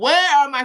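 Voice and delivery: furious, very loud, high-pitched angry yell. Retelling how a man went crazy at the people outside; retelling a man yelling. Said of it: "He was yelling at the people".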